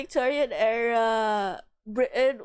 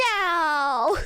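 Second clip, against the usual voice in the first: no drawn out at a high pitch; 7 semitones higher than usual. Retelling a friend's answer in a John Mulaney voice. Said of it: "and John Mulaney voice".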